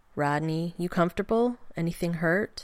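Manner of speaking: plain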